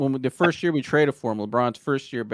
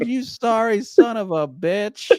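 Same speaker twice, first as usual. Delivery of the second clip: put-on voice laughing while talking, higher pitch; 9 semitones higher, 4 dB louder than usual. Retelling a friend's remark after a missed dunk: imitating John laughing while talking. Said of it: "you just heard John laughing".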